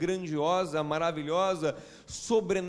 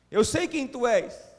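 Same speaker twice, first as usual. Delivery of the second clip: put-on shout, higher and louder; 6 semitones higher, 6 dB louder than usual. Retelling the blind man crying out to the Son of David: imitating someone shouting. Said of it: "E ele começa a gritar".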